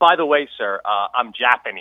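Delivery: pointed, mildly emphatic delivery. Retelling how a man who took his order looked back before leaving: speaking very loudly. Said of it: "very loudly he goes".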